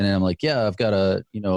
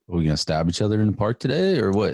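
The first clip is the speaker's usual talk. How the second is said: mock-offhand, casual, acted tone. Speaker recounting chatting with someone about prison, in a mock-offhand tone. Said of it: "I'm offhanded".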